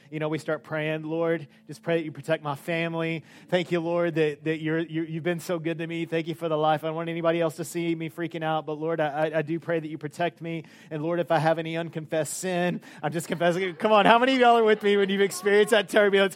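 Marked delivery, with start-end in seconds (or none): none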